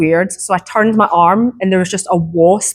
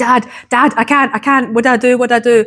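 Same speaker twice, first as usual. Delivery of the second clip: mock tearful, frantic, panicked crying plea; 4 semitones higher than usual. Retelling running to his dad after the dog incident, reenacting crying and screaming. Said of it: "crying, screaming, everything".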